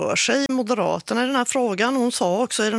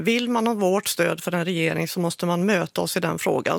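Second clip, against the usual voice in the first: usual speaking voice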